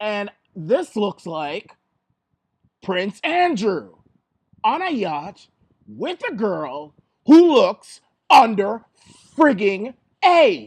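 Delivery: very loud angry outburst. A host reacting to photos they are showing, getting angry. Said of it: "You can hear it in my voice".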